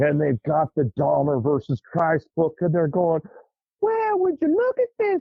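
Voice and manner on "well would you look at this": put-on gossiping old ladies voice, higher pitch. Retelling women gossiping over coffee about a comic book: imitating Fried Green Tomatoes ladies. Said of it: "like they're something out of fried green tomatoes".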